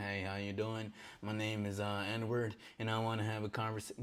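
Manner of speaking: stiff, flat, robot-like monotone. Showing how not to approach a woman: mock robotic talking. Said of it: "robotically talk to this woman".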